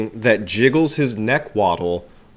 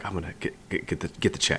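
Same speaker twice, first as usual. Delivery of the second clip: whispered, stumbling, halting repeats of "get"; 4 semitones lower, 12 dB quieter than usual. Retelling a film character offering to get the check: imitating a stutter. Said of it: "I like how he kinda stutters".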